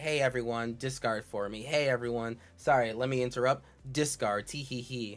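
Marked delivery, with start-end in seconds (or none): none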